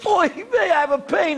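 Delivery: put-on high, pained cry in an old man voice.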